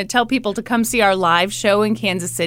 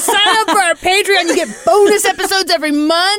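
pitched-up, hard-pressing, bearing-down voice; 9 semitones higher, 4 dB louder than usual. Pretending to push someone against a wall as bad cop: playing bad cop. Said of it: "good cop, bad cop thing".

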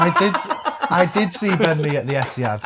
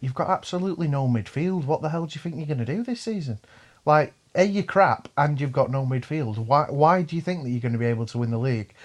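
ordinary talk, nothing marked

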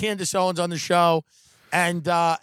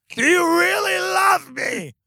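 put-on very high-pitched, drawn-out drunken screaming; 11 semitones higher, 4 dB louder than usual. Acting out being drunk at his own wedding: pretend drunk screaming. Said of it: "just be drunk and just be, like, screaming at your wife going".

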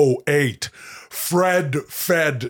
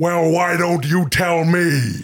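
irritated, annoyed tone; 2 semitones higher than usual. Reading the same line in different requested styles, this time pissy.

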